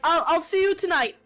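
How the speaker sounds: called out. Retelling how he shouted back after quickly closing the door, retelling a shout. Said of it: "And he shouts back".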